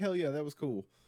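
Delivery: normal talking voice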